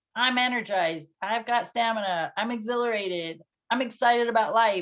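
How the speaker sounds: buzzing, lively, energized delivery. Describing the other side of their energy, energized, lively delivery. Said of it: "the other side".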